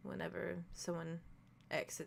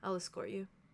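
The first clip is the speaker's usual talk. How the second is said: gentle, understated, simple delivery; 4 dB louder than usual. Voicing a character offering to walk a player to the cabin: very softly. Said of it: "very softly says".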